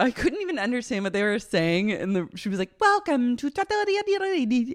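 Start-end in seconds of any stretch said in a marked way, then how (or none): 2.8-4.7 very high, slow, put-on Italian accent. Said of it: "She also was putting on an Italian accent".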